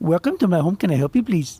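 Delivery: welcoming, put-on Indian English accent. Retelling how a man always greets him on the phone, in an Indian accent. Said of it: "in in in the Indian accent".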